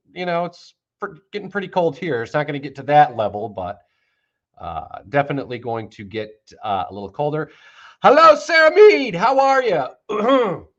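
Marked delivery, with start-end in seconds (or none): 8.1-10.6 voice cracking, very slow, high and loud. Greeting someone by name, voice cracking. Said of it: "voice just cracked".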